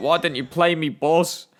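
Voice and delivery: put-on tearful, complaining tone. Retelling what a crying player on the bench said: imitating a crying, angry player. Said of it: "he was crying, like, looking really mad".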